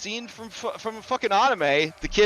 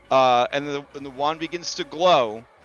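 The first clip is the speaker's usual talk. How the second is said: ordinary talk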